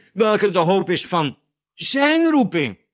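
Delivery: zijn stressed, spoken slowly. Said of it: "met nadruk op zijn".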